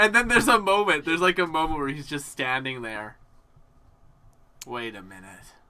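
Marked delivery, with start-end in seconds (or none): 4.7-5.2 gruff, grizzled detective voice, lower. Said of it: "grizzled voice behind you that you hear".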